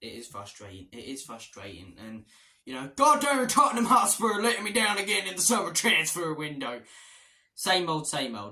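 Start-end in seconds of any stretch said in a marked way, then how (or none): 3.0-6.8 loud, laid-on, put-on Southern American accent. Football fan talking about his club's transfer news, in a Southern American accent. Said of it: "what that Southern American accent was for".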